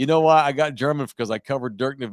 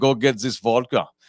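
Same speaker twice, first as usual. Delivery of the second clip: English spoken with a put-on German accent. Trying out accents, mixing up German and Russian: German accent. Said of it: "the German talks like this".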